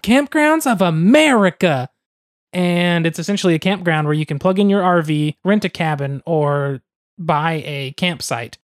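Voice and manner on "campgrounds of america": eager, bright, youthful enthusiasm, pitched up. Explaining what KOA stands for, saying the name with young enthusiasm. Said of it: "you have to say it with that young enthusiasm".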